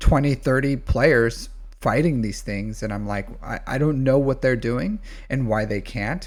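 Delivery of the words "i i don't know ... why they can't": usual speaking voice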